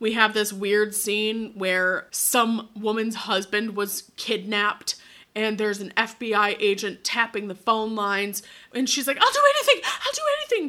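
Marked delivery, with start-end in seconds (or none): 9.2-10.7 play-acted very high, shrill, rushed sobbing scream. Retelling a scene where a kidnapped man's wife pleads on the phone: imitating a screaming, crying plea. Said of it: "just like screaming, crying".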